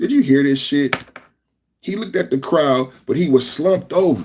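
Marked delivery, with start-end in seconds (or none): 0.0-0.9 amused, dismissive scoff, tossed off as an aside. Retelling how someone looked back at the crowd: imitating Charlie Kirk smirking. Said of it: "he smirked to his left".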